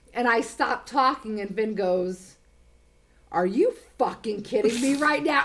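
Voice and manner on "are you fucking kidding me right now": dead-serious, grossed-out, disgusted disbelief. Retelling what a man said to her on a phone call, imitating a dead-serious tone. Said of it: "in the most serious tone".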